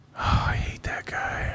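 hushed, breathy whisper. Hearing a disliked player named as a possible target, whispering. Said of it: "What are you whispering for?".

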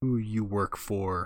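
gruff, low, slow mutter. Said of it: "points a gun at it and mutters".

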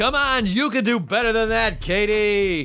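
mock, hyped-up warm-up announcer voice. Retelling how he just warmed up a co-host: imitating an audience warm-up hype. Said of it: "I audience warmed you up".

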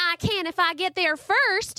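very high, slow, drawn-out yell. A younger brother calling out to his teasing older brother: yelling. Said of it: "[name] yelled".

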